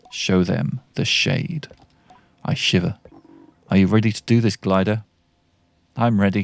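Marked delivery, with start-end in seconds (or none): 0.1-1.6 slow hiss, dripping with venom. Reading a game cutscene, a character hisses the last bit of his order, dripping with venom. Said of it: "he hisses the last bit, dripping with venom".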